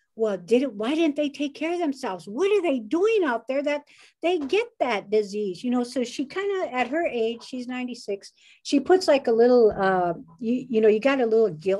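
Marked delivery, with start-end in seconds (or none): 0.2-5.7 really mad, angry, griping scolding. Retelling how mom complains about people without masks: imitating mom getting mad. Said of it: "she gets real mad".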